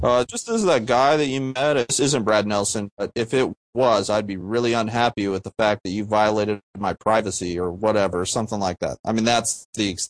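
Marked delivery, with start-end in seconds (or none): none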